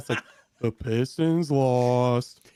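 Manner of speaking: glum, gloomy donkey voice, drawing out lost. Podcaster joking about a basketball team's loss, in an Eeyore voice. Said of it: "like Eeyore".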